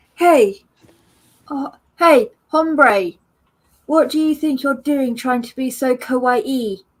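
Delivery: properly done English accent, held throughout. Imagining someone mixing words from different languages, the speaker does an English accent. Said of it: "going like English accent".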